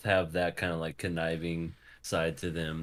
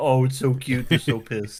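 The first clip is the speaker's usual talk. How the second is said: mock doting cooing voice, higher and louder; 7 semitones higher, 10 dB louder than usual. Imitating parents taking a pouty baby's picture: imitating parents cooing at a baby. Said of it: "And parents taking those pictures going".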